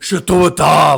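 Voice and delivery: loud, high-pitched, belted promo announcer voice. Retelling what a Russian wrestler said in promos: imitating Nikita. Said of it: "he'd always do that in his promos".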